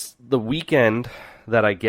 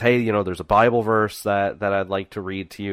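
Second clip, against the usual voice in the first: normal talking voice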